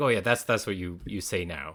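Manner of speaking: ordinary delivery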